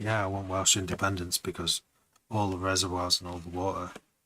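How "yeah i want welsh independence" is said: ordinary talk, nothing marked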